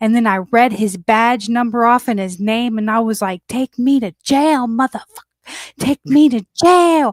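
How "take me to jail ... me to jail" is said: mild yelling, half-screamed at someone. Retelling screaming at a police officer, demanding to be taken to jail: retelling a scream. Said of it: "I'm screaming at him".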